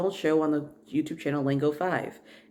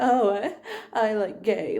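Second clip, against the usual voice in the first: high, slow caricatured mocking voice; 6 semitones higher than usual. Imitating critics who mock the speaker's voice: mocking stereotyped voice. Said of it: "that's a stereotypical".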